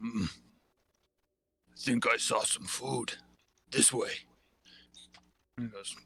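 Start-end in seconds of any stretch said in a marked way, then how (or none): 0.0-4.1 very slow, very drawn-out ogre monster voice. Voicing an ogre walking down the street, talking to another ogre: ogre voice. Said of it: "two ogres just walking down the".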